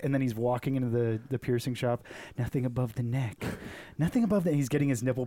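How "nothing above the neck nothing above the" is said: imitated whispering. Imagining a worker repeating a rule to himself: imitating someone whispering. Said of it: "he's still just whispering it to himself".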